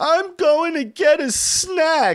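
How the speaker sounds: very high bawling, sobbing wail through the words. Retelling how she got off the couch still crying, speaker imitates her bawling. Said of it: "still bawling".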